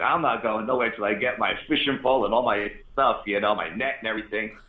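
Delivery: plain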